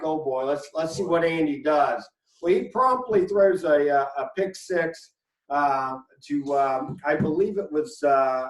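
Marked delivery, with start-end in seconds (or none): none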